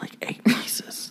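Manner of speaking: soft, slow whispered aside.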